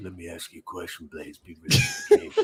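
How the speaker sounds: hushed, confidential whisper. Retelling a line once whispered to a friend: imitating own whisper. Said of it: "that whole thing where I whispered to you".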